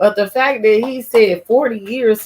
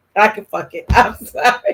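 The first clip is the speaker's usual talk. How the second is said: ordinary talk, nothing marked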